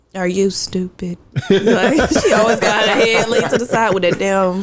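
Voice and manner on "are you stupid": very slow, every word drawn out. A speaker retelling what Elise said: Elise's very slow delivery. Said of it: "Elise said real slow".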